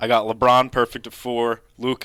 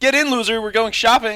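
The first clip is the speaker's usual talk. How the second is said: nasty, mean, cutting delivery, pitched very high; 12 semitones higher than usual. Told the first try was too kind, saying the line again: said meanly. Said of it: "say it like you're mean".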